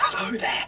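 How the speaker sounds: breathless put-on clown voice, out of breath. Imitating a clown from another game show: breathless clown impression. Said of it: "this is my impression of him. He used to be we out of breath".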